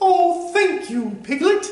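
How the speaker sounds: pitch way up, like a cartoon bear. Improvising a Winnie the Pooh scene, Pooh answers Piglet: Winnie the Pooh voice. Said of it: "improv of the character voices Pooh".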